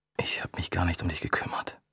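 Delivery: murmuring sheepishly. Narrator reads a man apologizing after days hunched over his papers, embarrassed murmur. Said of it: "murmelte er verlegen".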